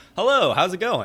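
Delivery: very high, very loud, nicer, friendly phone voice. Showing how their voice changes on picking up the phone: raised, louder, nicer. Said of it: "my voice raises, like gets louder, and like in my head it becomes nicer".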